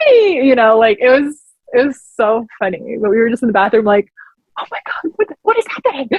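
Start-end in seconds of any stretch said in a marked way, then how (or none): 4.6-6.1 hushed, frantic, panicked, freaked-out whisper. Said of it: "freaking out".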